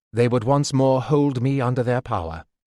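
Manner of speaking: ordinary delivery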